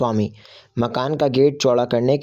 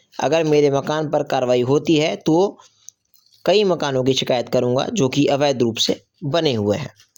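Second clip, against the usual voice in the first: ordinary delivery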